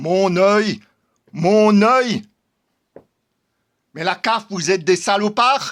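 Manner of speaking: angry, vehement, fed-up outburst. Speaker addresses the CAF in an unprepared video, angry. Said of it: "je me répète parce que je suis en colère".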